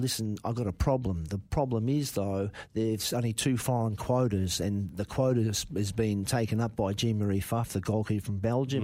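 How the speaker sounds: ordinary talk, nothing marked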